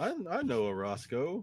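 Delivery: dim-witted, befuddled himbo. Playing a character in himbo mode, answering another character's question: confused himbo voice. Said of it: "I go into himbo mode".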